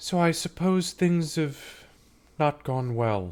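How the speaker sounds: high, slow, sleepy priestess voice. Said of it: "she kinda looks at you and she goes".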